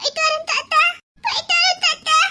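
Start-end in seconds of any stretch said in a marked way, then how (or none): 1.2-2.1 crying with a raised voice. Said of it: "எங்களுக்கு அழுக வர".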